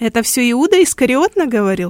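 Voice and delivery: derisive, scoffing, mocking tone. The prisoner, questioned by the roman governor, asks back mockingly. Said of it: "спросил он насмешливо".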